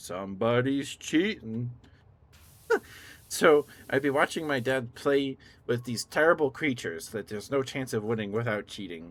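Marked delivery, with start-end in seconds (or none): 0.0-1.7 video-game henchman voice, announcer-style callout. Recalling a game their dad played, quoting the henchman: game henchman voice. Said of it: "the henchman voice goes".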